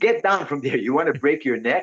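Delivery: put-on scolding parental tone. Retelling a parent's warning to a child: imitating a parent scolding. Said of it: "like my parents said to me".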